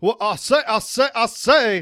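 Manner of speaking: put-on Louisiana accent. Speaker, after saying he can't do the accent, tries it anyway: Louisiana accent. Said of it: "See, that's not bad right there".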